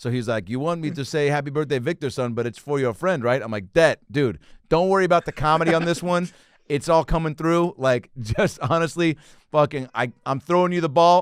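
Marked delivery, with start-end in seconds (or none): 0.5-3.4 heavy, thick, put-on German accent. Retelling what a man said about the birthday message, thick german accent. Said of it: "I heard it in a thick German accent".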